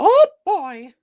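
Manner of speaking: squeaked out, high-pitched and loud. Speaker giving examples of impressions they can do: Mickey Mouse voice. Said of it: "I could do Mickey Mouse like".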